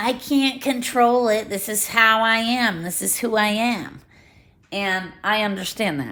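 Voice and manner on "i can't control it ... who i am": slow, drawn-out mocking tone. Quoting people who say they can't control their thoughts, mocking imitation of people. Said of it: "I'm making like a mocking voice".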